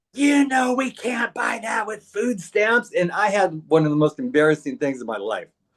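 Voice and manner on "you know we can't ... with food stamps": high, raised yell. Retelling a parent's reply to a request in a store: imitating mom yelling. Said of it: "my mom just yelled at me".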